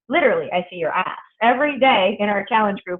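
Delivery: ordinary delivery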